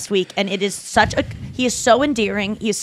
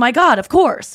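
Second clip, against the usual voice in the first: sincere, earnest, emphatic delivery; 4 semitones higher, 4 dB louder than usual. Describing how Jeff Goldblum answers: Jeff Goldblum voice. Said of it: "He's just saying".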